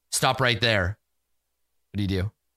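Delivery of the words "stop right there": artificial, synthetic, machine-like voice. Narrating a scene, voicing a call from the ornithopter, artificial-sounding voice. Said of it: "an artificial sounding voice".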